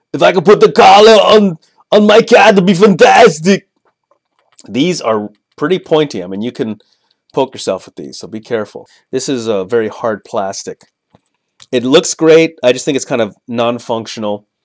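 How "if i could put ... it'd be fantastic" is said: very loud, high-pitched, belted-out exclamation. Reviewing a toy collar, doing an Arnold Schwarzenegger impression. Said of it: "That's how Arnold Schwarzenegger would".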